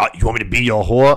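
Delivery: mock-angry, acted indignant outburst. Retelling how a rejected man reacted when he was all mad, mock-angry. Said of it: "Dude was all mad and was like".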